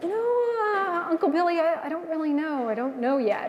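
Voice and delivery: mock faltering, unsure, nervous, hesitant voice. Retelling how the niece answered the fiance: imitating nervous speech. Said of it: "she got all nervous".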